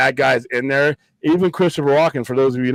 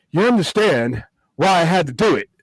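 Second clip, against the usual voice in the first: put-on Brooklyn accent, actor impression voice; 4 semitones higher than usual. Joking about Walken's role out in space, speak in Christopher Walken's Brooklyn accent. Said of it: "Walken's Brooklyn accent".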